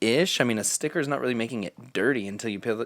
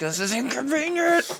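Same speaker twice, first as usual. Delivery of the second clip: mock very high, put-upon, irritated, fed-up grumbling; 3 dB louder than usual. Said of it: "so mad about it".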